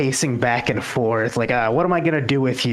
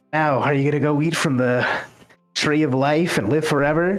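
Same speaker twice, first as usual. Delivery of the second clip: lightly mocking, almost sarcastic tone; 2 semitones higher than usual. Retelling how he asks the question, mock-sarcastic retelling. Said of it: "he sounds almost sarcastic".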